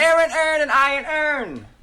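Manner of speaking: Baltimore accent bending every vowel. Correcting another speaker, saying the phrase in a Baltimore accent. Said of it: "Baltimore accents, say this phrase out loud".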